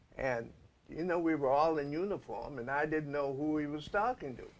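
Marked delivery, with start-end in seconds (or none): none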